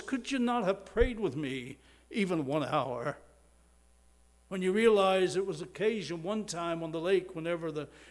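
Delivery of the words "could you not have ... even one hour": mock pained voice, weighed down with pain. Retelling the words spoken to the sleeping disciples: acting out a pained voice. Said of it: "you can hear the pain in his voice".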